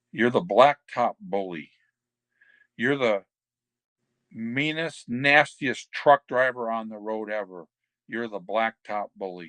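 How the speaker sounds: solemn, grave, dead-serious delivery. Retelling how Arn named the gimmick in the garage: imitating Arn getting real serious. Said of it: "whenever he gets real serious".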